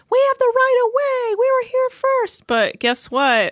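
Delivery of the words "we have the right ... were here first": mock yelling at a very high pitch. Retelling what the sailboat crew yelled at the captain: imitating someone yelling. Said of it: "And then they yell at him".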